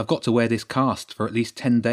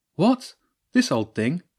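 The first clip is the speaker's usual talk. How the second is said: guileless, innocent, slightly high voice; 6 semitones higher than usual. James, asked about his tie, answers her innocently. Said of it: "James said innocently".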